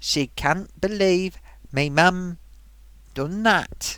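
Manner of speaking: Sunderland English accent. Passing on what she said, in an attempted Sunderland accent. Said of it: "Let's do it the way they talk up there".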